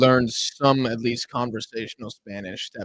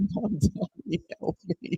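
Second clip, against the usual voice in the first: put-on acted scream, higher pitched; 6 semitones higher, 8 dB quieter than usual. Retelling a man yelling from a car: imitating a scream. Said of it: "He just screamed it out loud".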